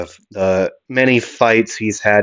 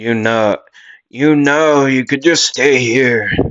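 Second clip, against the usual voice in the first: not-very-good put-on old lady voice; 4 semitones higher than usual. Retelling what Sister Teresa said outside the church: Sister Teresa, old lady voice. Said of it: "I know that's not a very good, uh, like old lady voice".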